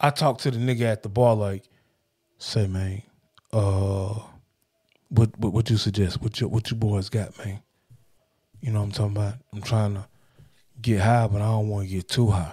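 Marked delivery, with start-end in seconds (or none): 2.4-7.6 low-key, low, hushed half-whisper. Retelling asking the person at the counter for suggestions: retelling own half-whisper. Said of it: "I'm even low-key kinda whispering".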